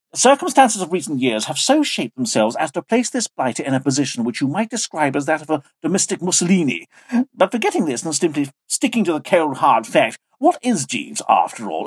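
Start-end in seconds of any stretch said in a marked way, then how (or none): none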